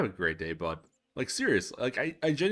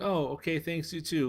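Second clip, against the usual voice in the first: hesitant, nervous, pitched-up voice; 7 semitones higher than usual. Retelling a maintenance worker's answer to a greeting: imitating a nervous reply. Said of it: "really, like, nervously".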